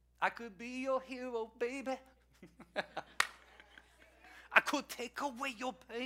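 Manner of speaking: soft put-on Spanish accent, best attempt.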